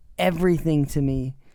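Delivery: ordinary delivery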